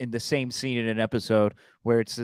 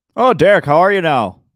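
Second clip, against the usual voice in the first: loud, high-pitched, blaring put-on Canadian accent; 6 semitones higher, 11 dB louder than usual. Greeting the listener by name, the speaker puts on a Canadian accent. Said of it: "were you doing like a Canadian accent there?".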